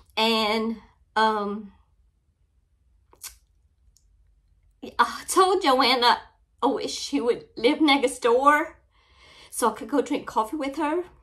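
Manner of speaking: speaking tearfully through crying. Showing viewers a coffee cup from a friend, crying while talking. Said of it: "I'm always crying on here".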